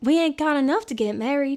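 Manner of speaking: put-on Southern belle accent. Recalling a line from a show once performed: Southern belle accent. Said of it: "like a Southern belle accent".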